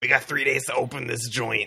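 put-on New York cab driver voice. The narrator voices a sewer-gator captain reporting to the players, in a New York cab driver voice. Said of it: "Why does he sound like a New York cab driver?".

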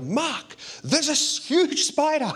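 mock very high, shrill, swooping loud shout. Retelling an evening watching TV, the speaker quotes Ellie calling him, retelling Ellie's loud call. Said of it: "there's a loud voice comes from Ellie".

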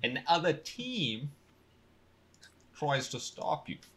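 put-on London Cockney accent. Explaining a game's rules to the group, in a cockney accent. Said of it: "Was that your first time doing a Cockney accent?".

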